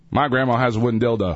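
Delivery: ordinary delivery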